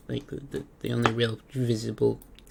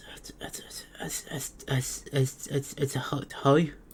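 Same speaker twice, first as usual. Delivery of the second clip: mock panicked hyperventilating breathing, higher pitch; 3 semitones higher than usual. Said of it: "he is hyperventilating".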